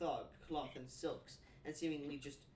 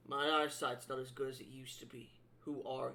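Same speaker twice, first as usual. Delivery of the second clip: gruff, rough-edged thug voice; 2 semitones lower than usual. Game master voicing a thug questioning a stranger, in a gruff thug voice. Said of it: "in a gruff voice you hear".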